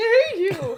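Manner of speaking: very high, loud voice cracking mid-word. Repeating own words right after the voice broke: imitating own voice cracking. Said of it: "I was like".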